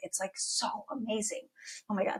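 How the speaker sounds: tearful, choked-up, breathy near-whisper. Describing a small group program, the speaker gets choked up. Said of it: "I am getting choked up talking about it".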